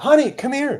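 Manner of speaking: put-on very high, loud, shrill yell. Retelling how she called someone over, retelling a yell. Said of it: "And she yelled".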